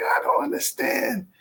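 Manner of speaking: acted-out mad, angry, heated outburst. Retelling how they once spoke to their father: retelling own angry words. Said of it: "I just got so mad at him".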